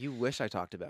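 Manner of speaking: ordinary talk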